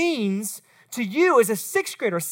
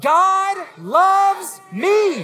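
eager, wholehearted, enthusiastic, raised and pitched up; 5 semitones higher, 5 dB louder than usual. A speaker leads the audience in repeating a phrase together: enthusiastic. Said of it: "y'all got to say it with some enthusiasm".

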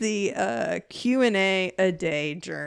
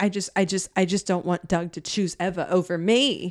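ordinary talk

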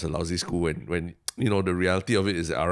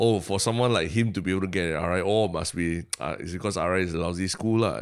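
ordinary talk, nothing marked

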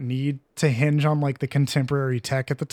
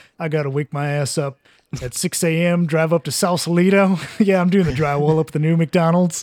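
put-on proud voice, louder; 4 dB louder than usual. Imitating Lawrence describing his construction job: imitating Lawrence saying it proudly. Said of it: "He says it, like, so proud".

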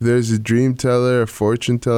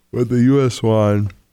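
talking mid-yawn, words stretched by yawning. Recalling a World Cup final with a co-host, yawning while talking. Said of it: "Sorry, I was yawning".

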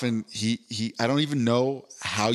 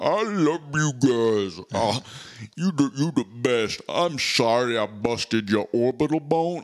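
slow, drawn-out, overjoyed giant voice. Retelling what a very tall guy kept saying to everyone: imitating a deep voice. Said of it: "Except he was deep".

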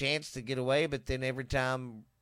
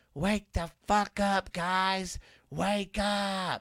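mock, very slow, long, high yell; 6 semitones higher than usual. Retelling waking everyone up while a bleeding dog lay on them: imitating own past yell. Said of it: "so I just yelled out".

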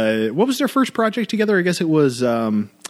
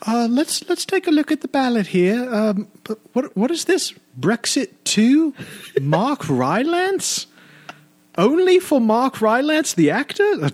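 shoddy put-on very high old British lady voice; 11 semitones higher than usual. In a made-up election-day bit, playing a voter reading the ballot: older british lady voice. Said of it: "older British lady".

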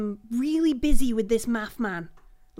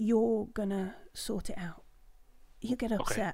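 secretive, quieter; 2 semitones lower, 9 dB quieter than usual. Voicing a lady who leans close to speak: conspiratorial. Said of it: "she leans close, like, kinda conspiratorial".

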